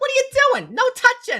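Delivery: put-on New Jersey accent. Imagining the woman is from New Jersey and speaking as her, in a New Jersey accent. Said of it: "what if she's like from New Jersey".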